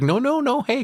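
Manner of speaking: high, mock flustered, squeaked protest.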